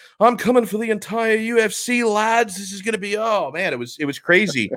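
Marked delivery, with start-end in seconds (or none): 0.2-3.2 put-on Liverpool accent, pitched higher. Retelling a fighter's post-fight interview: imitating Paddy Pimblett's Liverpool accent. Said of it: "amazing how different Liverpool accent is".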